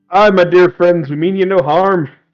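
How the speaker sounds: put-on very slow, drawn-out Scottish accent. Speaking in character to strangers, in a scottish accent. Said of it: "please don't do the accent".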